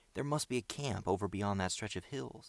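ordinary delivery, nothing marked

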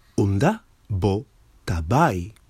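normal talking voice

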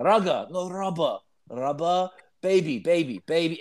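put-on broken English, Japanese accent. Retelling Aki's repeated attempts at the phrase: imitating Aki's broken English. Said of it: "with his broken English".

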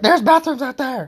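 play-acted very high, fed-up, frustrated yell. Retelling how a woman yelled at a man asking for the bathroom, imitating someone yelling. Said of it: "and just yells at him".

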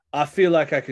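fake, put-on Cockney accent. Narrating a drow character speaking to the group, cockney accent. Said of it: "I don't know why I'm doing a cockney accent".

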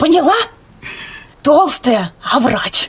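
loud, carrying theatrical stage whisper. Retelling a grandmother nudging her in a queue, in a theatrical stage whisper. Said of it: "бабушка совершенно вот театральным шепотом".

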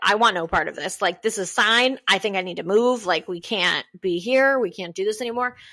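normal talking voice

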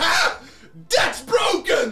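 very high, loud, gleeful, delighted shriek. Retelling how Danny reacted when the screen broke, imitating Danny's gleeful scream. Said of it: "In the most gleeful tone ever".

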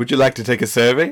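oddly natural, really human-sounding tone. Voicing a dog that spits out spam, in a really human voice. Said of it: "in, like, a really human voice".

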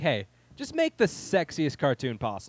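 ordinary talk

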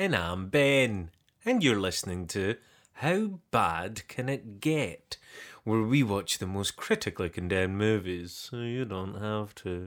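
put-on, grand, upper-crust posh voice. Co-host introducing the movie podcast, in a put-on posh voice. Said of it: "That was a wonderful posh voice you put on there".

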